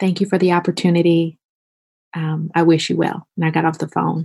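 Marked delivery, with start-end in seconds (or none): 0.0-3.3 acted, mock-sheepish tone. Recounting what she said to him on the phone, retelling a sheepish reply. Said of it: "I just said to him very sheepishly".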